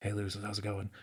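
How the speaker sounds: whispering. Showing how a message is sent through the magic jar: whispering. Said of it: "and I'll whisper".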